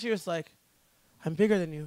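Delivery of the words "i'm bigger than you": put-on cute voice with Scottish accent. Retelling a press conference joke by a fighter: imitating Joanne Calderwood's cute voice. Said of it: "She's got, like, the cutest voice".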